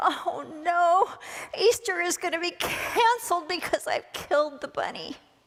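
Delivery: mock crying through the words, tearful, sobbing. Telling a joke, voicing a man who hit the Easter bunny: acted crying while talking. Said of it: "started crying, and he's like".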